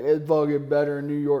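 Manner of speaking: imitated complaining, whiny voice. Retelling how Matt reacts to pizza: imitating Matt complaining about pizza. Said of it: "He's like".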